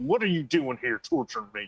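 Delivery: enraged, furious voice pitched very high. Voicing a man with a shotgun who rejects a picture: enraged. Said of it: "he just gets this look of rage in his face".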